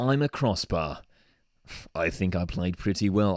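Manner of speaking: put-on British accent. Voicing the crossbar in a joke Man of the Match interview: put-on British accent. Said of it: "like, a British accent for some reason".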